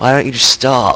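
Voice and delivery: exasperated fed-up tone. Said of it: "all you people out there are probably like".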